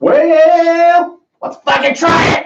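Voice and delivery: very high, very slow, drawn-out shout. Suggesting they try the beer: yelling. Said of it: "You don't have to yell".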